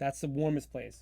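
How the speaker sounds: ordinary delivery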